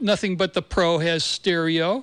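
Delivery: plain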